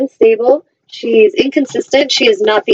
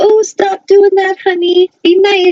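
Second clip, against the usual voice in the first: put-on timid little voice, much higher; 9 semitones higher than usual. Speaker imitates a mom telling off her children, in a little timid voice. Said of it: "mom's little timid voice".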